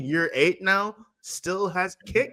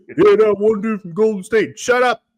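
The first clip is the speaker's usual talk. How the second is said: very loud, barked, taunting delivery; 3 semitones higher, 9 dB louder than usual. Mocking a player who talks trash from the bench, imitating Ja Morant talking trash. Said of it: "he just talks trash".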